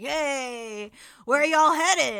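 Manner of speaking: very loud lizard voice, stretched-out hey. Voicing a lizard man driver talking to the passengers: voicing a lizard man driver. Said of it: "he turns and he's like".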